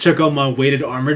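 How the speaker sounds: normal talking voice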